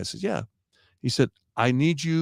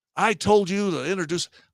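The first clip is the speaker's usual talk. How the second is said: put-on screaming, much higher pitched; 6 semitones higher than usual. Recounting a man who screamed at him about an introduction: retelling a scream. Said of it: "He's screaming at me".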